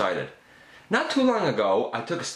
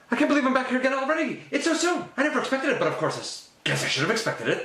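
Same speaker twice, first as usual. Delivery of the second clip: high-pitched, very fast excited gabbling; 11 semitones higher than usual. Arriving back somewhere sooner than expected, speaking very fast and excited. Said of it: "you speak really fast at the best of times".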